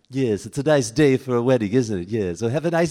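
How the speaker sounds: put-on loud cartoon baby voice. Speaker retells meeting a bride at a wedding and doing a Stewie impression. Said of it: "and Stewie would say".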